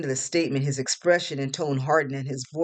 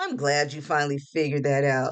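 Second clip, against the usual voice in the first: ordinary delivery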